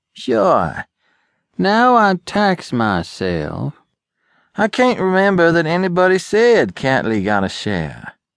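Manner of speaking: slow, deliberate, high-pitched delivery. Reading Pruitt's reply, spoken with deliberation. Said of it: "replied Pruitt with deliberation".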